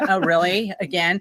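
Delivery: normal talking voice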